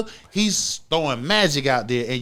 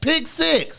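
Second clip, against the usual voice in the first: both words "pick six" heavily stressed; 11 semitones higher than usual. Arguing about a quarterback's game, insisting with stress on PICK SIX. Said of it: "Stress that".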